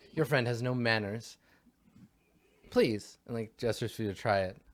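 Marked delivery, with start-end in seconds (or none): 0.1-3.1 reproving, put-out, disapproving, displeased character voice. Voicing a scowling character who scolds a player's rudeness: scowling, disapproving character voice. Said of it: "she scowls and she, and she turns to you".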